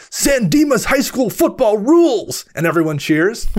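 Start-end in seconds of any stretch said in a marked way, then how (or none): 0.1-2.4 mock very high, shouted yell. Retelling a movie character's presentation ending: imitating someone yelling. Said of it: "and then just yells".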